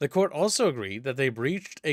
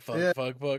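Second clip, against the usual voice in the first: ordinary talk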